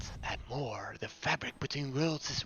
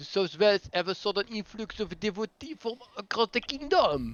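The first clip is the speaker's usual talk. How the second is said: best-attempt put-on French accent, raised and high; 8 semitones higher, 5 dB louder than usual. Speaker voicing an announcement about the Knight Herald, in a French accent. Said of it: "That would be French".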